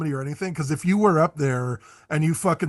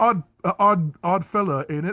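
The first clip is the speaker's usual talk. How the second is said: put-on British accent, typical British bloke; 3 semitones higher than usual. Quoting a joke from a social media post in a British accent. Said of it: "British people would see Satan in real life and say".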